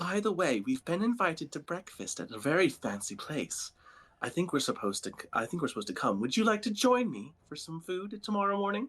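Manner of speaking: hushed whisper. A storyteller voices a woman who flicks her blade and bows, whispering. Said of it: "And she whispers to you".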